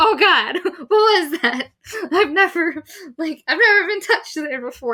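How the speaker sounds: high, loud, flustered freak-out.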